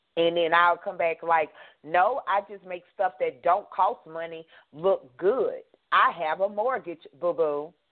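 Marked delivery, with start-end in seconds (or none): 1.8-7.6 voice dropped deep into bass. Retelling own comeback to a nice-nasty remark, with bass in voice. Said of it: "did y'all catch that bass in my voice".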